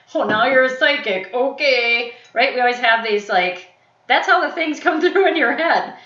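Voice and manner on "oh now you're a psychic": put-on mocking, derisive tone, louder. Speaker acts out how people will laugh at her, imitating people mocking. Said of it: "going to laugh because they're going to go like".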